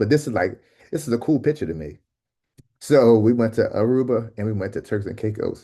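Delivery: on the verge of tears, tearful, choked up. Talking about a picture from their trips, tearing up. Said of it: "I don't know why I'm like tearing up on this".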